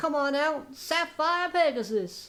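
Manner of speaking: bad Australian accent, high-pitched, slow, drawn out. Reviewing a card, the speaker imitates how Jesse summons it: bad Jesse impression. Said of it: "a really bad impression ... sounds a little bit kind of Australian".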